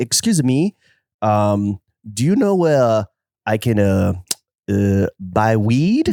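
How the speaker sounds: polite put-on French accent. Retelling what a model asked him after he held the door, French accent. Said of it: "I'm gonna do a French accent".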